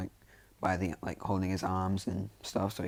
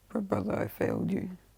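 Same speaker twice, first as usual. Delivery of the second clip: acted, very high, half-crying, teary voice; 12 semitones higher than usual. Retelling a scene where Ida walks into his brother's room: Ida crying a little, put on. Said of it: "he's kinda crying a little bit".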